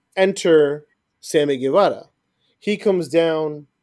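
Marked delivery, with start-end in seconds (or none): none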